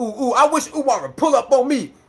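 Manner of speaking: swaggering, cocky tough-guy bravado. Mocking somebody who lies about Umar behind his back: mocking someone's tough bravado. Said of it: "all bravado".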